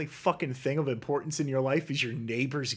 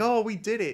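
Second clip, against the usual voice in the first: mock emotional triumph, higher; 8 semitones higher, 3 dB louder than usual. Retelling a show's ending with scorn: imitating an emotional celebration. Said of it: "the big emotional".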